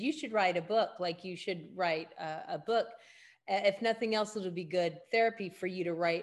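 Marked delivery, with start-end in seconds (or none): none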